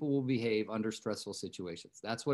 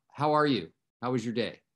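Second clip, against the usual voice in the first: put-on urgent tone; 6 dB louder than usual. Retelling his partner's phone call and her afterthought question, imitating an urgent tone. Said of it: "she had urgency in her voice".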